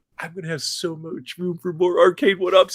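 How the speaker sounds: play-acted very loud, high, thrilled burst of excitement. Retelling a friend's message about more arcade machines: imitating someone excited.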